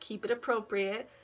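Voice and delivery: ordinary delivery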